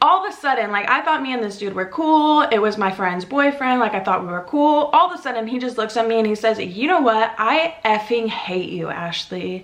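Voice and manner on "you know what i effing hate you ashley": blunt, slow, deliberate angry outburst. Retelling what the friend's boyfriend suddenly said to her: imitating angry outburst.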